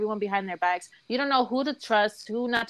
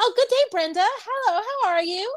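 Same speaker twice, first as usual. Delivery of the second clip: very high, bright voice; 11 semitones higher than usual. Retelling a call where Jessica greets a coworker: imitating Jessica's work voice. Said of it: "Do I really sound like that?".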